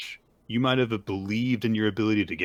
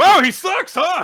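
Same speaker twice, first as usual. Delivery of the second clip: booming, very loud, shrill called-out jeering tone; 12 dB louder than usual. Acting out what a character heckles during a stage act: acting out a loud remark. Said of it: "Just loudly says".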